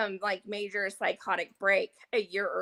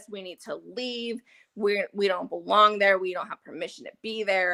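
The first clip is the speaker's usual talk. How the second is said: normal talking voice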